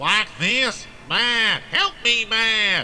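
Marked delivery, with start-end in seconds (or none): 1.1-2.8 put-on nasal Southern accent. Coached to mimic Franklin calling Matt for help, in Franklin's nasal southern twang. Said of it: "he had a bit of a southern twang".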